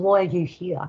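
ordinary talk, nothing marked

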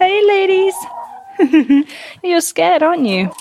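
high, slow pet-talk chicken voice. Talking to the hens, scared of the banging: chicken voice. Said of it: "I've got chicken voice".

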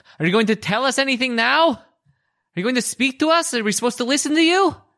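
calling upward toward the ceiling. Voicing a character calling out to a spirit: yelling up at the ceiling. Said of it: "yells up at the ceiling".

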